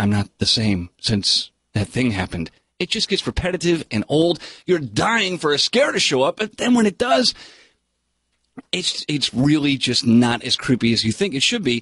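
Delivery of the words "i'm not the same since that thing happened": haunted, low, heavy lament. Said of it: "does an okay job at displaying".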